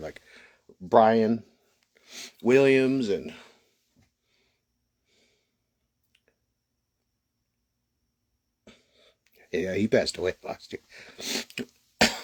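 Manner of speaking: choking up, emotional, fighting to keep composure. Remembering a friend who passed away last year, the speaker is choking up. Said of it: "Sorry, that was a hard one".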